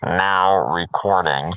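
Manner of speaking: mock sinister robotic voice. Complaining about the Craig recording bot: imitating the Craig bot. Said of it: "You sounded, like, almost like him".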